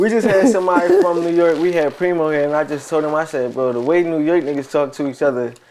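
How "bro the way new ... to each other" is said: ordinary talk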